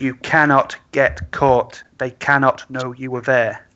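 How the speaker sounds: heavy emphasis on cannot, said slow and deliberate. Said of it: "let me re-emphasize this".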